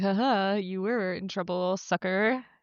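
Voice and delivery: slow, smug, gloating, jeering tone. Retelling a show scene as the older sibling: imitating a smug sibling. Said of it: "smug older sibling that's just like".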